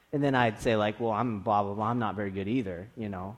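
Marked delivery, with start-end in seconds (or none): 1.0-2.8 snide, sarcastic, jabbing tone. Speaker acts out what they used to say to others in the music program, mock-sarcastic tone. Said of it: "kind of in a sarcastic tone".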